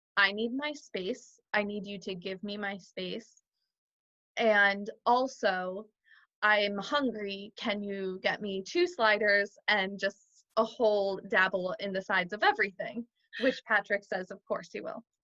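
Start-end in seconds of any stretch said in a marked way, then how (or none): none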